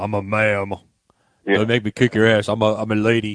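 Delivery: put-on deep voice. Showing the other speaker how to do the line in a deeper voice. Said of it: "You gotta do a deeper voice".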